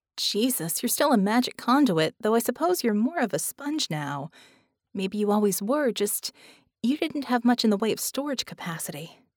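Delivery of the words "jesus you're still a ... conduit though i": ordinary delivery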